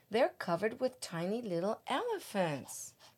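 plain

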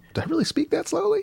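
very high, soft, laughing disbelief.

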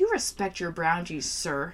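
put-on slurring words. Speaker retelling their own earlier advice to a co-host, slurring the words. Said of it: "You like how I just slurred?".

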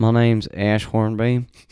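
put-on thick Southern accent. A speaker tries out a character's introduction for the group, in a thick southern accent. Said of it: "Just lean into that thick Southern molasses".

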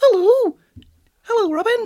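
very high, very loud, shrill cartoon mouse voice. Showing the other player what speaking like Mickey Mouse sounds like: Mickey Mouse voice. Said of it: "what's Mickey Mouse character?".

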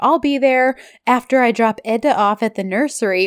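ordinary talk

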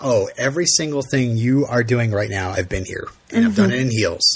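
plain

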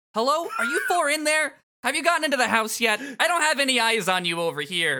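very high-pitched yelling. Speaking as a voice over the communications device: yelling into the microphone. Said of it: "You don't need to yell into the microphone".

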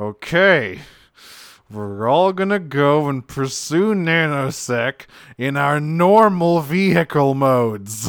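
put-on pissed-off, angry robot voice. Retelling Optimus glaring at Bumblebee: imitating Optimus pissed off. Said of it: "he is pissed off".

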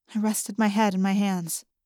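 plain reading voice

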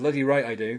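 ordinary talk

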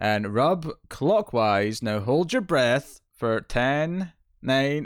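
static, flat, monotonous robotic machine voice. Recounting instructions given in a scene, robotic Alexa-like voice. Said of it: "like a robotic, like Alexa sort of voice".

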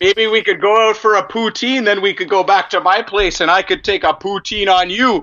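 over-the-top Canadian charmer voice. Playing a character asking a woman out, in overly Canadian ladies man voice. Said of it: "my overly Canadian ladies man".

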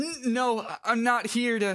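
intimidated character voice. Voicing a game character cornered by a pushy kid: intimidated character voice. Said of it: "this man is so intimidated by a fucking gamer child".

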